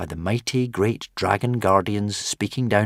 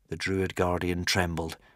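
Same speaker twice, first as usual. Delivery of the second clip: ordinary delivery, nothing marked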